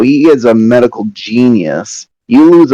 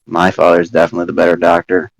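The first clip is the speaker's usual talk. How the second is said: low, grumbled mutter under the breath; 5 semitones lower, 5 dB quieter than usual. Voicing a character who mutters a remark: muttering under her breath. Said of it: "my character says under her breath".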